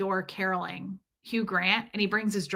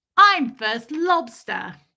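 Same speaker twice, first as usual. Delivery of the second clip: cutesy, loud put-on little-girl voice; 4 semitones higher, 7 dB louder than usual. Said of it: "Reese is amazing at accents".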